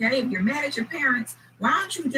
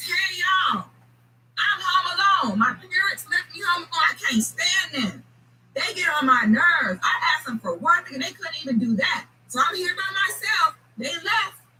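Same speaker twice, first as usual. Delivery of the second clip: put-on high-pitched yelling scream; 6 semitones higher than usual. Acting out an upset boy in a story: screaming to the world. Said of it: "goes outside and screams to the world".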